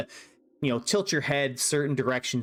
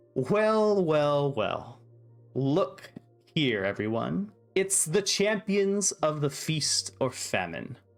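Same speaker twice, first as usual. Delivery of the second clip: taunting, mocking, sarcastic swooping sing-song; 2 semitones higher than usual. Voicing a character greeting the champions in mock welcome: sarcastic. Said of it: "he sarcastically takes a bow".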